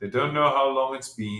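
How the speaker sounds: plain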